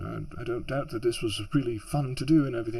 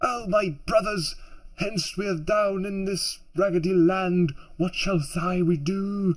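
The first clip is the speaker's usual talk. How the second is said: put-on theatrical stage voice, higher pitch; 6 semitones higher than usual. Showing how Frodo was imagined speaking before seeing the film: mock Shakespearean Frodo voice. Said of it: "Shakespearean sort of, um, s-, not unrealistic play where Frodo would be".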